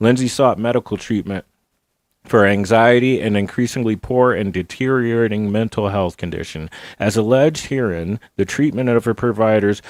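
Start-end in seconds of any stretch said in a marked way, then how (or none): none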